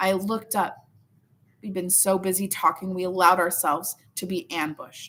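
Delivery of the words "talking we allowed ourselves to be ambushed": ordinary delivery, nothing marked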